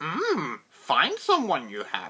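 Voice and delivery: sing-song character voice, pitch swooping and bobbing. Trying Yoda's voice again after a failed attempt: Yoda impression. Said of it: "That's a little better".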